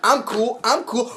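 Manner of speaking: high, bumbling gangster voice with bluffing bravado. Imagining Jar Jar as a bumbling gangster, in a bumbling gangster Jar Jar voice. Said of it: "If he was a bumbling gangster".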